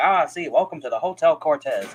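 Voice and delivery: put-on 1930s old-timey accent. Describing how people in 1930s shows and serials talk, doing an old-timey 1930s serial voice. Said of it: "that's a terrible impression".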